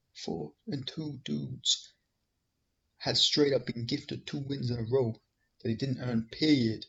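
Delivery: hushed, very soft, very quiet stage whisper. Showing how the comment would not sound: imitating a half-whisper. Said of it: "he's not whispering this".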